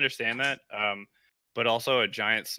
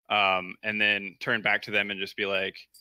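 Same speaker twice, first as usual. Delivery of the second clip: ordinary delivery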